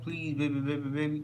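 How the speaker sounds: usual speaking voice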